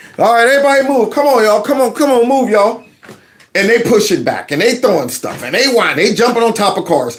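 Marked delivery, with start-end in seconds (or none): 0.2-2.9 high, exasperated, frustrated voice. Imitating cops pushing back a crowd: imitating frustrated cops. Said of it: "the cops seem so frustrated".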